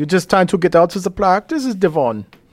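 thick put-on German accent. Repeating a line to Devon about skipping practice: heavy German accent. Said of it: "say that, like, in a heavy German accent?".

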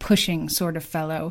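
ordinary delivery

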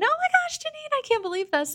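very high, rapid, swooping thrilled scream. Janine recalls a woman who hugged her in the office, imitating her excited screaming. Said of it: "she's screaming".

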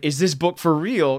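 ordinary delivery

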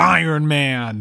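heavily stressed, very hard inflection. Retelling how a man in the audience said a line during the movie: really hard inflection. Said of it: "says it in this, like, really hard inflection".

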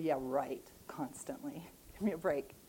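mocking, disbelieving, dismissive sarcastic tone. Reacting to a verse about constantly rejoicing in hope: sarcastic. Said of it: "so I'm a bit sarcastic".

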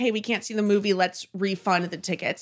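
ordinary talk

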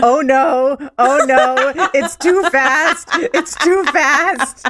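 very slow, high, very drawn-out screaming cry. Retelling a too-fast ride down a track: imitating own past screaming. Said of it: "the whole time you were screaming".

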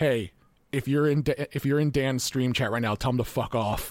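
put-on flat deadpan voice. Retelling what Jeff said to the camera during live coverage: imitating Jeff's deadpan line. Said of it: "Jeff just deadpan looked at the camera and said".

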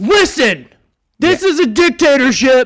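very high, very loud, shrill yelling. Speaking to their subordinate about who outranks whom, yelling. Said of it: "I'm sorry for yelling".

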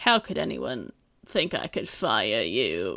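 slow, deliberate, drawn-out character voice. Retelling a scene where the chairman speaks: Malcolm McDowell impression. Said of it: "Did you like my impression?".

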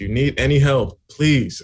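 loud, drawn-out, begging, pleading tone. Retelling the last reminder email: imitating a begging email. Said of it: "You guys are begging them".

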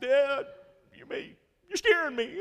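put-on very high, very loud sobbing child voice. Retelling a nine-year-old daughter's words to her dad: imitating daughter crying. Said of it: "Stop crying".

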